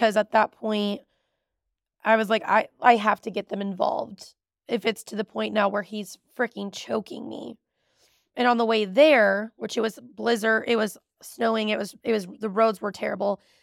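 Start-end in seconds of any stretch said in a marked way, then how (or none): none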